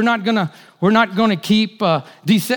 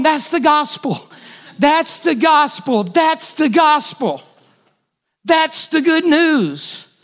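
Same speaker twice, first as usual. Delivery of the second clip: put-on babyish blubbering, slow, tearful, drawn-out sobbing; 6 semitones higher than usual. Recalling sitting on the couch watching, retelling crying like a baby. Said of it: "crying like a baby going".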